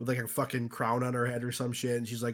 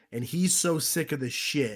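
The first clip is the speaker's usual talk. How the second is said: normal talking voice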